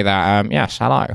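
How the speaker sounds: nerdy, nasal, creaky British anorak voice. On a podcast, demonstrating a voice for the other hosts, nasal British anorak voice. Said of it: "This is nasal British anorak voice".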